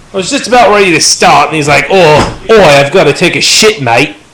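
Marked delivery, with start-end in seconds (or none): 1.9-4.1 put-on very drawn-out poor Australian accent. Speaker quotes a man interrupting just before the start: bad australian accent. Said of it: "That was a really bad Australian accent".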